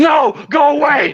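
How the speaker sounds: very high, scared, panicked yelling. Imitating Markiplier running through the woods: Markiplier running scared. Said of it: "Markiplier running through the woods like".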